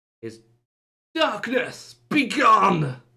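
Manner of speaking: huge, commanding, very loud, high boom. Narrating a large echoing church where a voice suddenly sounds, Fernando's large booming voice. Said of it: "a large booming voice".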